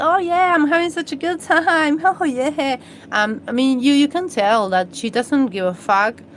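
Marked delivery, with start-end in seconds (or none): 0.0-2.8 high, loud, giddy gushing. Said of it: "she's giddy here".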